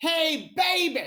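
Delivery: loud, high, belted-out stand-up comic holler. Showing the bit from old sets: Dave Chappelle impression. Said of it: "so I can just do the Chappelle".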